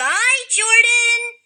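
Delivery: very high, loud puppet-show voice. Saying goodbye after agreeing a deal, in a puppet voice. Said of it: "Didn't mean to do the puppet voice".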